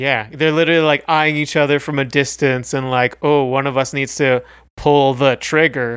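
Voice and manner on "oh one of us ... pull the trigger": ordinary delivery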